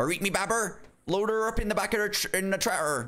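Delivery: very high-pitched put-on English farmer accent. Speaker shows an English version of an accent, in an English farmer accent. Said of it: "It's almost like a farmer accent".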